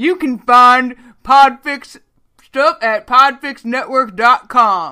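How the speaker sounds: very slow, deliberate, booming he-man delivery. Speaker reads the network's website plug in Manly Stanley voice. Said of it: "I'll do it in my manly Stanley voice".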